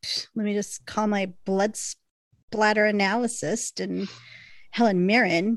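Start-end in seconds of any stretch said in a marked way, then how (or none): none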